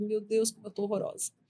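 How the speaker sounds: tearful, crying, words forced out through tears. Retelling what she said at the first dressing change: retelling own tearful words. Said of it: "Eu entrei no curativo chorando e eu saí chorando".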